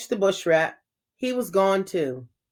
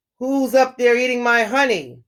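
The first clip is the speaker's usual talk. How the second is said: growling lion voice, like a big cat; 3 semitones higher than usual. Narrating a story where a lion finds others eating his honey, growling lion. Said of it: "He growled".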